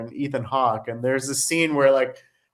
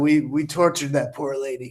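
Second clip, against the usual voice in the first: fake rough, gravelly voice. Retelling lines delivered on a film set: gravelly Michael Madsen voice. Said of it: "best Michael Madsen impersonation".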